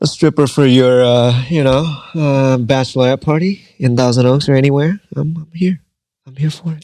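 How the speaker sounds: laid-on, put-on charming sales voice. Advertising oneself as a stripper for bachelorette parties: put-on charming voice. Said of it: "Don't do that voice".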